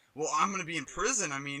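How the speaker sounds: proud, matter-of-fact, boastful tone. Retelling a classmate's answer about his future: imitating someone saying it proudly.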